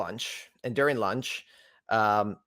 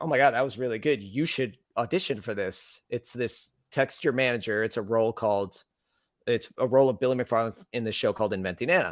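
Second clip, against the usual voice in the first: ordinary talk, nothing marked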